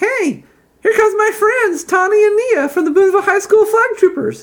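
very high, loud, squeaky voice. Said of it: "then says in a high-pitched voice".

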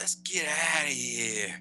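put-on little-kid mobster voice. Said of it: "She sounds like an old mobster".

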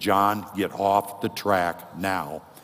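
loud, stern, very slow, godlike delivery. Speaker retelling a voice warning John off the track, stern God the Father voice. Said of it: "with a sterner voice".

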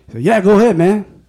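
put-on surfer Mexican accent. Speaker retells a dog owner at a park answering, in a surfer-mexican accent. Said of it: "It's like a surfer slash Mexican accent".

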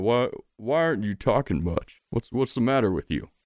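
giant toad character voice. Voicing a toad who puts an arm around the player: voicing the largest toad. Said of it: "He says".

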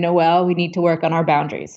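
mock deadpan. Speaker recalls how the listener answered her request: retelling a deadpan line. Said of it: "you looked at me with a deadpan face and said".

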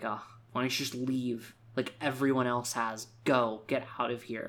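ordinary talk

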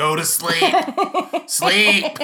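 shrill, very loud, drawn-out high-pitched scream. Retelling screaming at someone who needed to sleep early, retelling a scream. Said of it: "and I just went into the bedroom and screamed".

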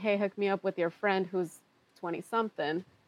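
ordinary talk, nothing marked

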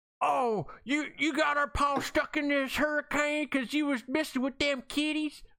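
put-on little southern country kid voice, very high. Recounting the first minute of a Twister parody, quoting a kid with a southern accent. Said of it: "a kid with a southern accent that's like".

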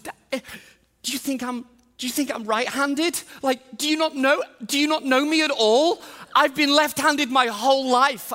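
mock teary kid voice. Retelling a son's tearful protest: imitating a tearful child. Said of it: "tears start to come down his eyes".

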